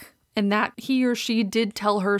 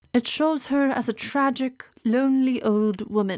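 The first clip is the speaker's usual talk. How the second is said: put-on documentary voiceover delivery; 4 semitones higher than usual. Quoting a documentary narrator describing a photograph, in a documentary narrator voice. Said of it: "and I will try to do the voice".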